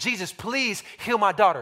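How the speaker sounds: woman's voice, put-on pleading, begging tone. Retelling the Gospel story, voicing the woman's plea to Jesus, acting out a woman begging. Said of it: "She's begging".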